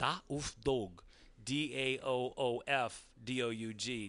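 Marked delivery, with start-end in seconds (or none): 0.0-1.0 put-on German accent on a name. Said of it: "you should adopt a German accent".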